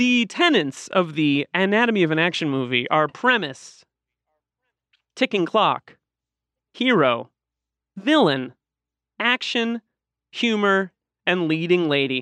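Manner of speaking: robotic, machine-like delivery, sounding like an ai. Speaker reading a list aloud to the others, sounding like an AI. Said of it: "I feel like I sounded like an AI".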